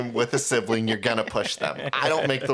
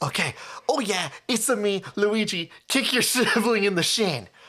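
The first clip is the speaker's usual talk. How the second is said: put-on sassy video game character voice, higher; 8 semitones higher than usual. Pitching a game idea, voicing the character bossing players: sassy Luigi voice. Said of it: "everybody's just a little bit sassier".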